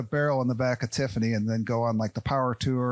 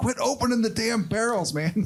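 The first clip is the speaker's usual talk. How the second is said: very high, exasperated, pissed-off, scolding tone; 10 semitones higher than usual. Retelling what the business partner says to the speaker: imitating pissed-off Brandon. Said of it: "he gets so pissed at me".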